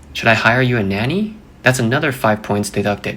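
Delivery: ordinary delivery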